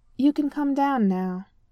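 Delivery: dry, understated, bone-dry delivery. Reading a story, T'Challa tells Shuri she can come down now: dry. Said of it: "T'Challa said dryly".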